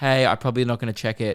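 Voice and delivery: flat, toneless delivery. Retelling own voicemail greeting to another speaker: imitating own flat voicemail greeting. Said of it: "in the voice tone".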